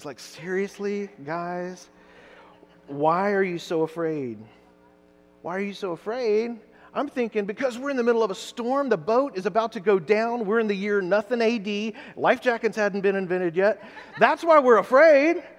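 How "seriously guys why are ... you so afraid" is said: put-on irritated, exasperated, annoyed tone. Retelling a reply to those who woke him in the storm: imitating an annoyed reply. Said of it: "Jesus is just, like, annoyed".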